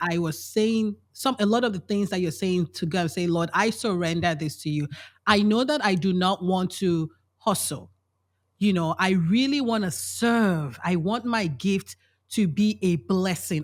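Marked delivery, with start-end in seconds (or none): none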